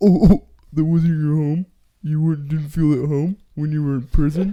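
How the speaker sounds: mocking mimicry. Retelling the other speaker's interruption: mocking imitation of the other speaker. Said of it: "That's what you sound like".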